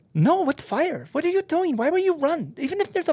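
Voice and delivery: put-on very high, sweet, cute little French-accented voice. Retelling a fire on a plane wing, speaker quotes Annie's reply: imitating Annie's cute French voice. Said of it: "Annie's a little cute little French French voice".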